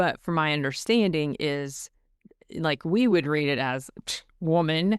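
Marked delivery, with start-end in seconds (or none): none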